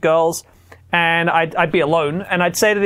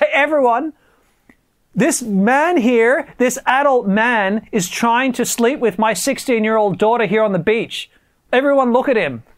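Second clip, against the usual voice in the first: put-on indignant, angry voice calling out loudly; 5 semitones higher than usual. Retelling a beach encounter where a girl's father calls out to everyone; imitating an angry man. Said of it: "This guy was angry".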